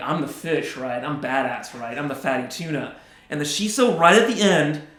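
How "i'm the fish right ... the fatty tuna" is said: put-on swaggering, full-of-itself, cocky talking-fish voice. Giving the sashimi a voice as it boasts in the bite: cocky sashimi voice. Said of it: "the sashimi's all cocky".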